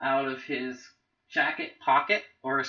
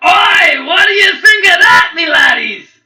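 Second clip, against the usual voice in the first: gleeful, boastful, shrill, very high, very loud scream; 17 dB louder than usual. The narrator voices Fen the barkeep after the goblins disintegrate, screaming out. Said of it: "[name] the barkeep does some sort of incantation or something. / and then he pulls out a vial out of his jacket pocket or his coat pocket".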